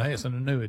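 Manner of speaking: plain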